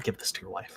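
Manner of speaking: hushed whisper. Voicing a character handing over a gold ring: whispering. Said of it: "just whisper".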